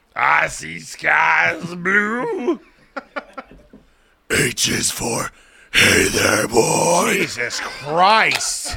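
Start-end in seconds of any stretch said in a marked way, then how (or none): 0.2-7.2 acted death-metal growling voice. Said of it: "Or Cookie Monster Metal".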